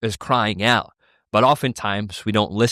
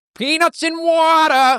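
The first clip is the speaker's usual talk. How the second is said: odd, really weird, very high-pitched voice; 4 dB louder than usual. Asked for it one more time, redoing someone's really weird voice. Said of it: "How did it sound again? One more time".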